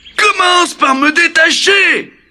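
choked, strangled, very high scarecrow voice. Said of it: "dit l'épouvantail d'une voix étranglée".

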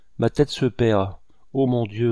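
plain

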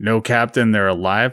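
ordinary delivery

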